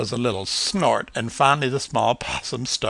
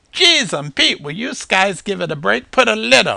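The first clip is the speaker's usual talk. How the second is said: put-on raccoon voice, pitched up and loud; 9 semitones higher, 5 dB louder than usual. Narrator voices a raccoon calling out from behind an old refrigerator; raccoon character voice. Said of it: "but when he stood it was apparent that this was no ordinary raccoon. ... He was wearing an I Love New York t-shirt and a Yankee ball cap with the bill off to the side. / The distinctive mask on his fa".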